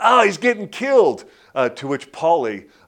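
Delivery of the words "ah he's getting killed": shrill, very high, loud yell. Retelling a fight scene, voicing a trainer in the corner, re-enacting a yell. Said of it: "he just yells out".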